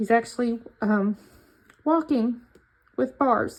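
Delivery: tearful, on the verge of crying. Presenting the layout and describing his recovery, on the verge of tears. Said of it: "and I'm going to cry".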